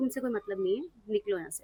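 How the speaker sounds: plain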